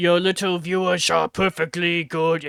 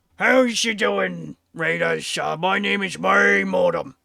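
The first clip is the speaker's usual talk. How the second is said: put-on orc character voice; 2 semitones higher than usual. Greeting raiders on stream while impersonating an orc: loud put-on orc voice. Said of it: "this voice is very loud".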